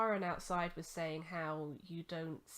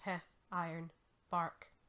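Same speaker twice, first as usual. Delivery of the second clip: usual speaking voice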